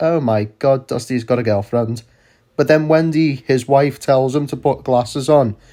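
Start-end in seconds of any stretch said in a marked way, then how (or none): 0.0-2.0 offhand, casual, unbothered, nonchalant delivery. Retelling a character's line from a show episode: imitating a nonchalant remark. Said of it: "he very nonchalantly says".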